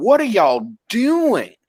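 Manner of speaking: slow, drawn-out, half-yelled mild yell. Retelling watching a scene, imitating own screaming at the screen. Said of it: "I'm just sitting there screaming".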